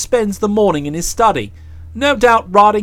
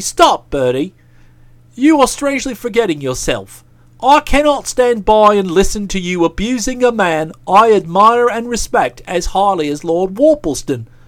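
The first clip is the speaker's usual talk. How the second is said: ordinary talk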